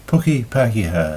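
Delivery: ordinary delivery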